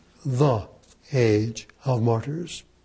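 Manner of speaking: "the" stressed, leaned on heavily. Pointing out the definite article in a phrase: stress on the. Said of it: "with a stress on the age of martyrdom, the definite article".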